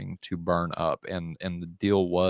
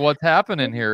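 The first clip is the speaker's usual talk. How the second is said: put-on mocking prophet voice, higher and louder; 8 semitones higher, 7 dB louder than usual. Retelling a Bible story, acting out Elijah making fun of prophets: mocking Elijah voice. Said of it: "just making fun, like".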